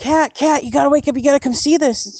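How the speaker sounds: put-on high yell. Retelling waking a best friend to come see a paw print, re-enacting the yell. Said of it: "I'm like yelling at my best friend".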